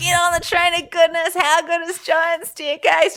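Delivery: put-on, very high cheering shout. Retelling how the race founder cheered at the top: imitating someone shouting. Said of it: "just shouting".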